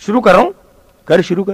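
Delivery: ordinary delivery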